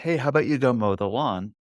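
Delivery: normal talking voice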